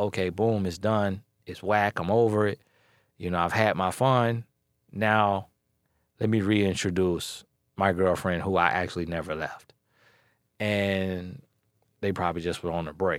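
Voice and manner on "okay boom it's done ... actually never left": normal talking voice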